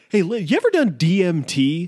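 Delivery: drawn-out, swooping podcast-host voice. Imitating a podcaster asking a guest a question: imitating Joe Rogan. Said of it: "It's like".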